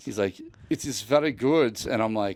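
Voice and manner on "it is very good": put-on slow, raised voice in a German accent. Retelling chatting with a random German guy about the Evil Queen, doing Dieter from Sprockets impression. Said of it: "he totally sounded like Dieter from Sprockets".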